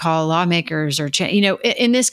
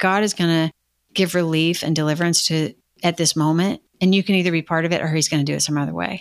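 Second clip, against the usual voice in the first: usual speaking voice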